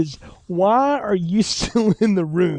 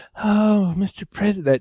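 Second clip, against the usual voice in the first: put-on full, badly done baby-talk voice. Mocking an actress's bad Marilyn Monroe impersonation: Marilyn Monroe baby talk. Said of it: "that baby talk stuff".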